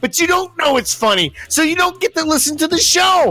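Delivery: high, shouted newsman-style rant.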